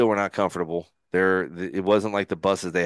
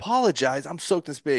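put-on angry voice, higher; 8 semitones higher than usual. Retelling replying to an apology after being soaked: retelling own angry words. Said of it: "I remember I was so mad".

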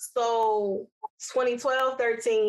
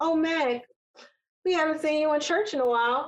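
warm, nurturing tone; 6 semitones higher than usual. Retelling an aunt's remark while she serves food, imitating Aunt Dee, motherly. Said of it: "The way she said it was so motherly and so nice".

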